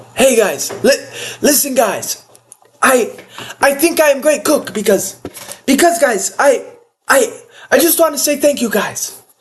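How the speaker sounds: imperfect put-on voice, high, halting, stumbling, stammering. Ranking people as cooks, imitating Merab: not the best Merab impression. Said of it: "can't do the best Marab impression".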